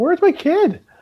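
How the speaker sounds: loud, very high, frantic freaking-out scream. Retelling a game moment of losing a kid at the mall: retelling screaming at the tv. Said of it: "I'm literally screaming at my T V".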